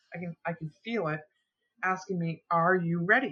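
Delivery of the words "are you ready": play-acted annoyed, irritated and impatient voice. Retelling a voice in the night asking a question: imitating an irritated voice. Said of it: "getting irritated with me".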